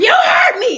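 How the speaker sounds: very high, angry, accusing outburst. Retelling a woman's sudden outburst at the speaker, mimicking an angry outburst. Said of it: "very calmly".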